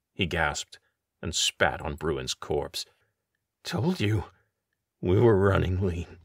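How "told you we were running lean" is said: slurring the words together. Narrator reads a man's line just before he collapses into Peter's arms; slurred. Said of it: "he slurred".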